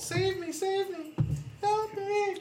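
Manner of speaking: put-on very high, squealing, girlish little-girl voice. Game master voicing the nobleman crying for help: squealing like a little girl. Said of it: "The nobleman squeals like a little girl".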